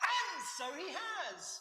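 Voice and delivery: very high, carried-away shouting. Speaking to listeners about the Bible, the speaker answers his own question: shouting. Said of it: "Shouting again".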